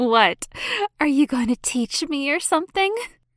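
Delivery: playful teasing snicker. Narrating a woman looking teasingly at an older woman, snickering teasingly. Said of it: "Snickered Jasmine, looking teasingly".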